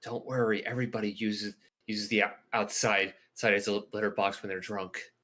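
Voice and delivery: hushed whisper. Speaking in character to another character after the group's instructions, whispering. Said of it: "I whisper to Kaya".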